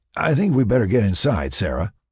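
plain reading voice

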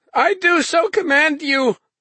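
trembling, feverish, very high, quivering cry. Thomas commands the man who offered to stay and serve him, in a quivering, febrile voice. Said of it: "Thomas cried in a quivering, febrile voice".

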